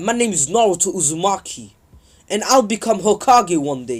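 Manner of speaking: usual speaking voice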